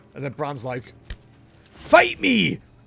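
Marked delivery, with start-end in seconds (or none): 1.8-2.6 put-on Scottish accent, very high and shrill. Retelling how a companion picked a fight with a mob, Scottish dwarf accent. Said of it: "I'm a dwarf with a Scottish accent".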